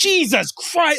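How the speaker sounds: play-acted, very high, fed-up, exasperated outburst. Retelling how he cried over a Nintendo, the speaker imitates dad's upset outburst. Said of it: "he was so upset that I was crying".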